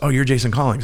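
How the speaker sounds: ordinary talk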